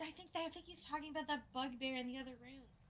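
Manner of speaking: hushed, half-whispered aside. Tabletop player speaking in character to their party, half-whispering. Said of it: "I whisper and I tell my party".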